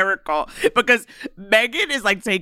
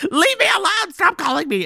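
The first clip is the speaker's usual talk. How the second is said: put-on, very high, frantic, freaked-out pleading tone; 11 semitones higher than usual. Retelling a movie scene where a woman answers the caller: imitating a freaked-out plea. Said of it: "And then she freaks out".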